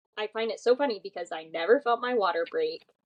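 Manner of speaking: ordinary delivery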